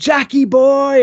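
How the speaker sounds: high, slow, loud shout. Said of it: "And I shout".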